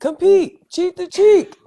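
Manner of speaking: very loud, shrill, high-pitched coach-style yelling. Retelling what a coach shouted across the field: imitating a coach yelling. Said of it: "my coach yelling at me".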